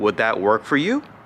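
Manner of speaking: pitch climbing up on final "you". Teaching how to ask a question, pitch rising toward final you. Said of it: "I am increasing my voice, just a higher pitch".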